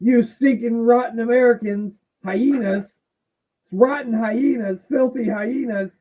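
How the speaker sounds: slow, high-pitched rant. Showing an impression of a 1997 wrestling promo: Bret Hart promo impression. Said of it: "my impression of a Bret Hart promo".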